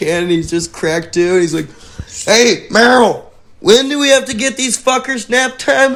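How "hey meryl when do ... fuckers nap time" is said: put-on very high-pitched old man voice. Acting out an old guy at a daycare holding beers: old mustached guy voice. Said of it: "old guy with a handlebar mustache holding a kid".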